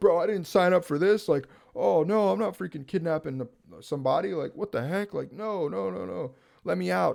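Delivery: high, frantic, panicked freaking-out tone. Retelling a scene, act out the coder freaking out at his companion. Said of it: "the freaking coder's like freaking out".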